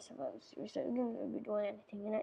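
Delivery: rushed, very fast talk. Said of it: "I think I'm speaking too fast".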